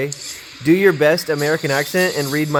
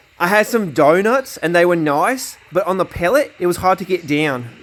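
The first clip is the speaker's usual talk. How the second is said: attempted Australian accent; 3 semitones higher than usual. Asked to give it a go, attempting an australian accent. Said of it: "my uh, Australian accent attempt".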